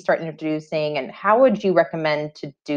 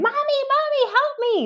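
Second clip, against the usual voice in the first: put-on frantic child's scream, very high. Speaker retells the child screaming when a YouTube commercial pops up: imitating a child screaming. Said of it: "she starts screaming".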